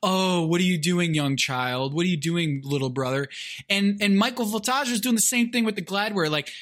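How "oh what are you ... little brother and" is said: mocking, imitated condescending tone. Retelling words to an older brother at ping pong: mocking a condescending tone. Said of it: "Very condescending".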